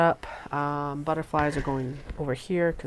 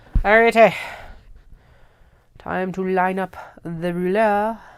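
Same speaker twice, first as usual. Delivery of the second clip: very loud, terrible put-on French accent; 5 semitones higher, 9 dB louder than usual. Crafter lining up the ruler over fabric templates: terrible French accent. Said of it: "Terrible French accent".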